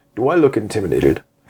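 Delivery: really deep, low, dropped voice. Retelling what a man said while looking a woman in the eyes, imitating a deep voice. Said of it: "He's got a really deep voice".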